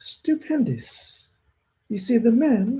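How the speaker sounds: high, soft, drawn-out voice. Trying out a new impression he is working on, Eubank impression. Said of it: "I'm going to work on the Eubank... it's a higher tone tone voice".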